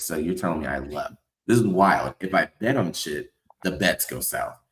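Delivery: normal talking voice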